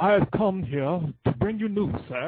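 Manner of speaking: put-on British accent. Describing an actor's range, imitating him with a British accent impression. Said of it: "that British accent".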